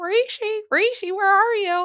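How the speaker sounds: put-on very high, very loud drunken yelling. Imitating how his voice goes higher when he gets drunk: imitating a drunk friend's higher voice. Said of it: "when he gets like drunk, it like goes like higher".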